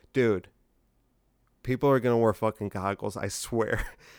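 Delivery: ordinary talk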